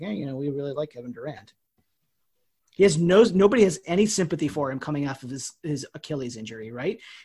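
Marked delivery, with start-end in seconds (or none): 0.0-1.5 soft, hushed, not very loud. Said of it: "we don't wanna say very loudly".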